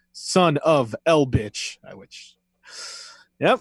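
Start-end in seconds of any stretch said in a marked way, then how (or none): 0.2-1.8 slow, drawn-out comic delivery. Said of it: "And he says".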